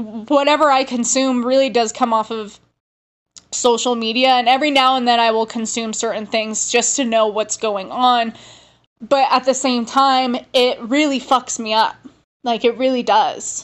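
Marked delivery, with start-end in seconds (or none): 9.0-13.6 tearful, fighting back tears, barely holding together. Talking about how consuming the news affects them, holding back tears. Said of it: "I'm literally like holding back tears".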